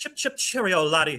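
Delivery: put-on Welsh accent. Mocking a flat Earth debater: mock Welsh accent. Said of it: "He's Welsh".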